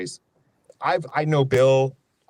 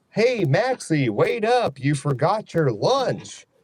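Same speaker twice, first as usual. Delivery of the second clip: silly, dopey, goofy cartoon dog voice; 4 semitones higher than usual. Doing the goofy bit a listener asked for, in a goofy cartoon dog voice. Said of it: "you want that goofy thing".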